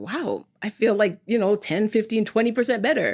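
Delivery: plain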